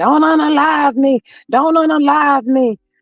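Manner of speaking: mock little boy yelling and screaming, high. Retelling what a little boy screams: imitating a little boy yelling and screaming. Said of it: "he yelling and screaming".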